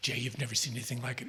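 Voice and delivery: very low, deep, soft, goofing put-on voice. Retelling goofing around about the Corn Palace, low voice. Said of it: "I talk in this low voice".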